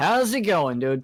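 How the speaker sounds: as loud and happy as possible, high and cheerful. A character pushes open the double doors, greeting whoever is inside: as loud and happy as possible. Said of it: "as loudly and happily as possible".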